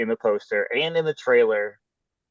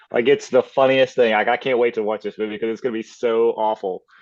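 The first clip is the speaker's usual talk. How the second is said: ordinary delivery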